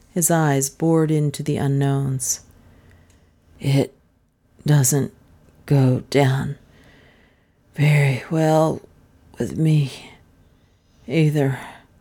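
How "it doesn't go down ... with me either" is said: weak, feeble voice, halting and breaking mid-phrase. The unknown man answers the detective's rough questioning, weakly. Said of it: "said the unknown weakly".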